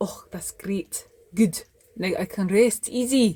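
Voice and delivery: put-on Scottish accent. Brassy, after being promised it will get done, answers in a Scottish accent. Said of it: "I don't know why I'm talking in a Scottish accent".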